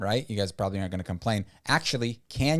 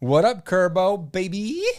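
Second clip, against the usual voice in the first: loud yelling, higher and louder; 10 semitones higher, 7 dB louder than usual. Greeting a viewer on a live stream: loud yelled greeting. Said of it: "I think I'm just yelling".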